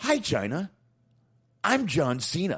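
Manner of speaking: very high, slow, showy, every word drawn out. Reading a short apology aloud in John Cena mode. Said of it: "let me get my John Cena mode here".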